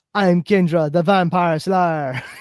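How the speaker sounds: terrible, badly done put-on Caribbean accent. Mocking the worst actress they've seen on film, in a bad Kendra Caribbean accent. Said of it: "worst Caribbean accent I've ever heard".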